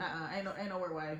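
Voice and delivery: ordinary talk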